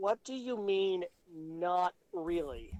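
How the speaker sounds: exasperated, slow and very drawn out. Playing a character pinching his nose at a confusing answer: exasperated. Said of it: "just kinda creases his eyebrows".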